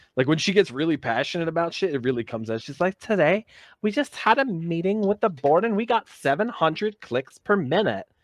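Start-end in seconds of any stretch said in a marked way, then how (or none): 3.0-8.0 exaggerated, high-pitched Valley girl accent. Imitating her describing a board meeting, exaggerated Valley girl accent. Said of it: "that Valley accent ... full blown fucking SoCal".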